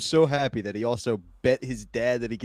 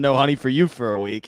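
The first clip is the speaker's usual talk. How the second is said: ordinary delivery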